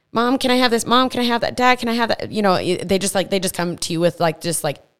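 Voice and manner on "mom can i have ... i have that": put-on eager, fearless kid voice, pitched up. Speaker acting out kids asking their parents, imitating a bold kid asking. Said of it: "not afraid to ask you for things".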